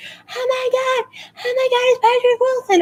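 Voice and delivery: put-on very high shrieking and screaming through tears. Retelling a 15-year-old girl seeing someone pass by, imitating a girl screaming and crying. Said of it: "she's like screaming and crying".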